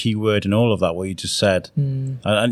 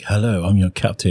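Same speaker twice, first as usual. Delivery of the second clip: put-on posh, upper-class voice. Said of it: "that's posh, isn't he?".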